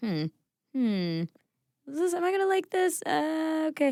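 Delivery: very high, fast, doubtful hmm. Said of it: "where you're going".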